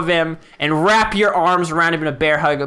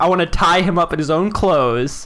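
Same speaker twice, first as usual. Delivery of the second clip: ordinary talk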